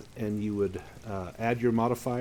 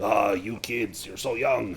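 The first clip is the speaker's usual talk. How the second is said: put-on voice of a seasoned old miner. Voicing an old lady hurling lumber aside: old miner voice. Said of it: "she sounds like an old miner".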